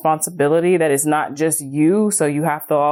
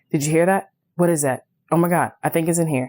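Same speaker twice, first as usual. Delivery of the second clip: fearful, worried, alarmed voice. Retelling waking him at night over mice: acting out own past fear. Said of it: "and I was afraid".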